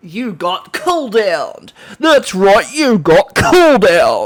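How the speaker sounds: booming, high, loud, slow, drawn-out character voice.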